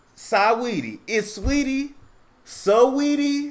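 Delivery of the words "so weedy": Floridian accent. Trying out how to pronounce a girl's name, in a Florida accent. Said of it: "from Florida".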